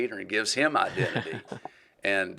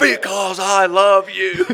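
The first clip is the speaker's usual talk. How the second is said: very loud, high, shrill preacher hollering; 10 semitones higher, 10 dB louder than usual. Speaker retells a preacher's answer when asked why he's yelling: imitating a yelling preacher. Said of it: "they're yelling".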